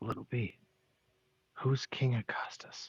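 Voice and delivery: hushed, whispered aside. A player speaking as their character to the guy: whispering. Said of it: "I would whisper to the guy".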